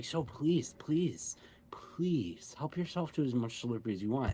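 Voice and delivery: hushed, very quiet voice. Asking a patron questions in character in private, speaking quietly. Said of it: "I lowered my volume now that it's more private".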